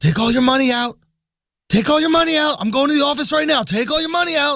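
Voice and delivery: very high, wired, excited, frantic ranting. Retelling a Wall Street guy on the street urging him, imitating an excited, crazy man. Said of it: "He's like all like excited and crazy".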